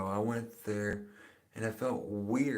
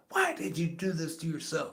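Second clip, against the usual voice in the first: put-on angry, high, swooping voice; 7 semitones higher than usual. Retelling a mother's reaction to a first tattoo: imitating mom being mad. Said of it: "my mom got so mad".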